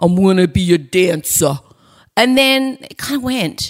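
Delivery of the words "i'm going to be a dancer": put-on Brooklyn-accented speech. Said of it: "No, Brooklyn".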